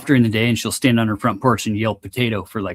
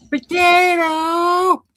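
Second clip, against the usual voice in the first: put-on old woman's voice, screaming; 3 dB louder than usual. Imitating the potato lady yelling from her porch for two hours: imitating her screaming. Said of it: "what does she sound like when she's screaming potato".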